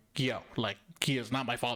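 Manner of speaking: put-on stern girl's voice. Retelling a movie scene where Ofelia speaks to Mercedes: imitating Ofelia speaking sternly. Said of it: "she said it very sternly, like".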